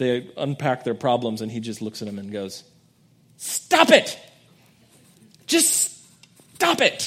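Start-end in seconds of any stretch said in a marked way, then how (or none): 3.4-7.1 acted angry scolding, very slow and raised. Retelling a Bob Newhart counselor sketch: imitating Bob Newhart getting angry. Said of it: "He just gets angry and says".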